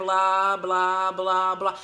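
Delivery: low, flat, dead-level droning monotone. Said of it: "like that monotone actor in Ferris Bueller".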